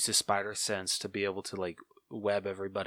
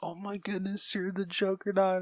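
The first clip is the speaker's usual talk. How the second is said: put-on panicked voice, much higher pitch; 11 semitones higher than usual. Recounting the fight scene where the Juggernaut appears, imitating Deadpool freaking out. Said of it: "Deadpool's just like freaking out".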